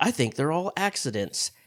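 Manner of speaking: ordinary talk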